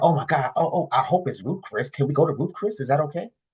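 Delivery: imitated excited pleading tone. Retelling a woman's eager restaurant request on a surprise outing: mock-excited pleading. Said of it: "She said".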